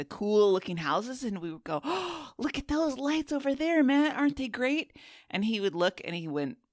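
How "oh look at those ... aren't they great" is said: very high, mock bright, cheerful coaxing. Retelling pointing out lights to a grumpy friend: imitating cheerful coaxing. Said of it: "trying to kind of gently jostle him out of his bad mood".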